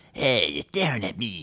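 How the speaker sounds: put-on cartoon kid voice. Showing a trick for handling a bully: Cartman voice. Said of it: "imagine Cartman from South Park coming up to you and going".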